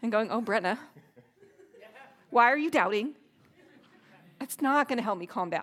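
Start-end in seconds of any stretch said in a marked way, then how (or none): 0.3-3.1 put-on scolding voice, louder. Speaker imagines Jesus chiding her at a left turn, mock-scolding as Jesus. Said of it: "Jesus is kind of scolding".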